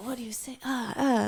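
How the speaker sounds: fervent, stumbling, halting delivery with passionate pauses. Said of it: "He's so passionate".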